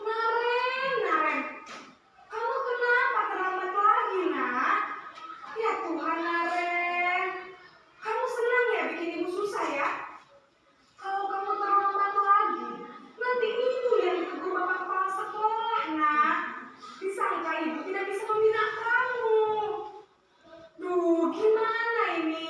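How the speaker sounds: calm, guilt-tripping teacher-like voice.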